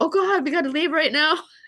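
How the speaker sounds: frantic, alarmed panic. Retelling a friend's reaction after they broke a glass; imitating a freaked-out friend. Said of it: "he totally freaked out".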